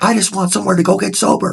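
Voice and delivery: fake high-pitched shouting. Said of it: "Are we still yelling?".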